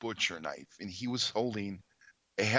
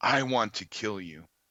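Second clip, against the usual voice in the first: menacing voice, half hiss, half growl; 4 dB louder than usual. Retelling an attacker's threat, the speaker imitates it as a hissing growl. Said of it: "like a hiss and a growl".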